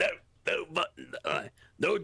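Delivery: dopey, dumb gym-bro meathead voice. Describing what they start doing when pressed, talking in a meathead voice. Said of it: "talking in a meathead voice".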